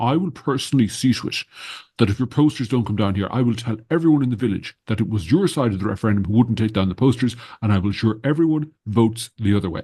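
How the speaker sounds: fast, snooty, self-important tone. Retelling what a man said on the phone during a referendum campaign, mock-snooty voice. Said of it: "in the snootiest tone of voice".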